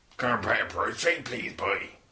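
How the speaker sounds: speaking with a Cornish accent. Asked to order a beer in another accent, the speaker tries: Cornish accent. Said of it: "Now do a Cornish accent".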